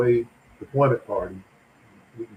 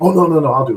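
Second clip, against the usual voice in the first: very loud, high, firm, forceful insisting voice; 6 semitones higher, 8 dB louder than usual. Retelling an exchange over a laptop, the speaker quotes her: imitating forceful insisting. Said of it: "Very a little more forcefully".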